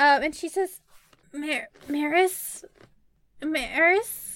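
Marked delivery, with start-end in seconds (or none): 1.3-4.4 small, faint, soft, faraway voice, higher. Voicing a character gently calling to Maris: small, faint, quiet voice. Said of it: "You hear a small, faint, quiet, faraway voice".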